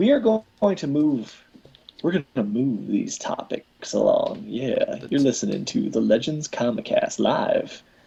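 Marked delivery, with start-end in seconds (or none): 5.1-7.8 seductive, sexy radio-announcer delivery. Host announcing the show live to listeners, in a sexy announcer voice. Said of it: "I tried out my sexy announcer voice".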